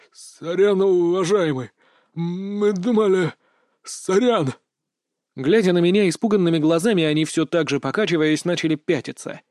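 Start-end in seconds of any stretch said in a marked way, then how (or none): 0.2-4.5 stammering and much slower. One of the leather-clad men backing away from the mage, stammering. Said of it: "заикаясь, проронил один из кожаных".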